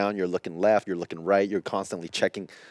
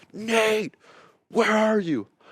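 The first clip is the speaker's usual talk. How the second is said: mock, very high, full-lung searching call-out; 14 semitones higher, 3 dB louder than usual. Retelling yelling for a companion who gave no response: retelling a yell at full lungs. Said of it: "I'm yelling at the top of my lungs".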